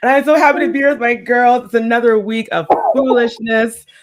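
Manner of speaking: normal talking voice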